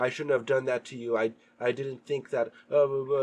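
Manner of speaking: put-on choked-up voice, holding back tears. Retelling a scene where the goddess speaks, imitating someone choking up. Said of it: "The goddess is choking up, trying not to cry".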